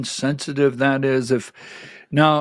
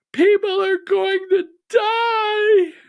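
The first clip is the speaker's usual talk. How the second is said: mock yelling, higher pitch. Retelling what someone at a town hall yelled: imitating someone yelling. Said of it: "someone in the back of the room yelled out".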